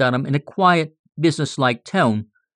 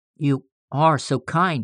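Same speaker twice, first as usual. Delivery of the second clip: murmured at a much slower pace. She answers the man who asks her forgiveness; murmured. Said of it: "she murmured".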